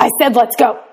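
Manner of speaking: low, deep growl from the chest. Speaking to the children again 15 minutes after the first call, now in a Batman voice. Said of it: "Batman voice".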